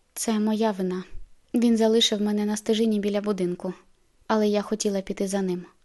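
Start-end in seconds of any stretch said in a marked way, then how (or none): none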